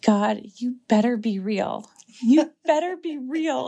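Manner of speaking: tearful crying said out loud. Retelling how she cried out in the tabernacle: retelling crying out loud. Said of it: "I started like crying and saying it like loud".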